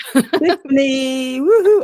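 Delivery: very high, loud, giddy, high-energy excited whoop. Co-host opening episode 31 for listeners, really excited. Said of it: "I'm just really excited".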